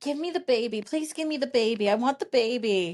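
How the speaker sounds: eager, insistent, pleading, begging voice. Retelling the store owner lady asking for the baby: imitating the store lady begging. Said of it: "she would say".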